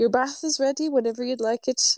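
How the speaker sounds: tender, gentle, high, quick voice. Retelling how they back off after her side-eye and speak to her, softer voice. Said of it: "in a softer voice".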